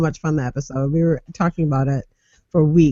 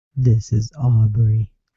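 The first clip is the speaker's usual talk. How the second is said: very low, deep, dropped-down put-on voice; 7 semitones lower than usual. Taking a turn at impersonating Aubrey after others tried: imitating Aubrey, deeper voice. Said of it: "It's easier to go deeper".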